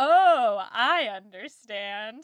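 insincere, sarcastic tone. Retelling a character's reply to a clergyman: imitating a sarcastic reply. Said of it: "But I read it as sarcastic".

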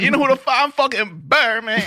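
mock very high, strangled, slow, on the verge of tears. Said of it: "about to cry".

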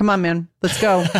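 tired, flat, unbothered deadpan monotone. Describing a frustrated character facing zombies, the speaker imitates him: mimicking an unraised voice. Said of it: "not even bothering to like, raise his voice".

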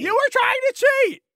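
very high-pitched, shrill shouting yell. Playing a game master scolding a kid for cheating: yelling. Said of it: "why are they yelling at me".

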